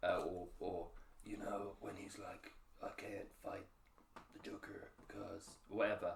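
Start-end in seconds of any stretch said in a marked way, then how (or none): 2.8-6.1 stiff, try-hard, deep gruff put-on voice.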